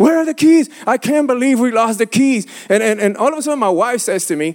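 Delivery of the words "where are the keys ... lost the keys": hollering, kept mild. Speaker retells yelling at his wife and kids, retelling his own screaming. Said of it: "I'm screaming. I'm hollering".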